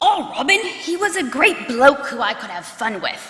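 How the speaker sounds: loud, exaggerated, badly done put-on Australian accent. Speaking on behalf of a bonus mom from australia, bad aussie accent. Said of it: "that was my worst Aussie accent".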